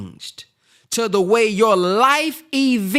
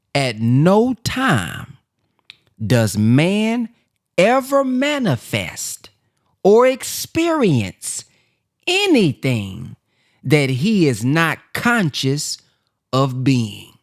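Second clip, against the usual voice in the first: very slow, halting, broken up mid-phrase; 7 semitones lower than usual. Telling listeners to write this sentence down, then reading it said slowly. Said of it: "I'm going to say it slow".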